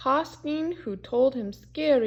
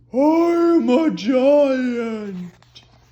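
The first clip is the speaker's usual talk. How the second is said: very loud, booming giant bellow, I'm held long; 9 dB louder than usual. Reading a children's story aloud, voicing a man with a voice like a giant. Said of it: "who had a voice like a giant".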